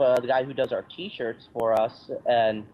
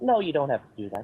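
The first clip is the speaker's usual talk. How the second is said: put-on timid, meek British voice; 2 semitones higher than usual. Retelling how Martin turned down a website offer: Martin impression. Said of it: "I love your impression of him".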